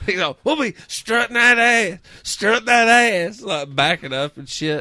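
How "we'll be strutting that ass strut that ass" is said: play-acted drunk man voice, high pitched, ranting. Retelling a news interview with a man who was drunk: imitating a drunk man. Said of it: "He's all fucking drunk".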